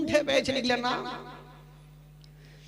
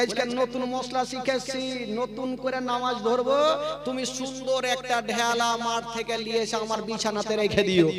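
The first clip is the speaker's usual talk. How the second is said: ordinary talk, nothing marked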